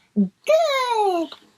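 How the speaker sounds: very high, drawn-out, excited tiny bug voice. Reading a bug's speech bubble aloud to listeners, in a little bug voice. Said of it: "I think that's how the little bug sounds".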